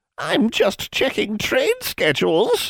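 croaking voice, pitched way up. Hilda answers the wizard in the red uniform who jabbed her, in a croaking voice. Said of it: "she croaked".

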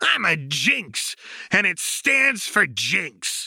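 very high, swooping shout laden with cackles. Reading a story aloud, the narrator voices a character's line, cackling shout. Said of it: "cackled, and shouted".

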